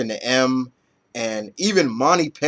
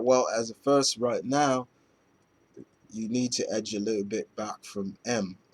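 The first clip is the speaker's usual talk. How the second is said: soft put-on British accent, played straight; 2 semitones lower, 8 dB quieter than usual. Retelling a story scene and voicing a female character, in a British accent. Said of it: "why did I do a British accent?".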